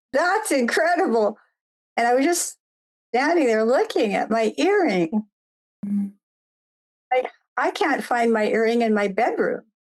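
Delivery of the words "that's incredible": called out in a yell. Retell your boyfriend's reaction behind you when you picked up your earring, retelling a boyfriend's yell. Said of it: "he just yelled".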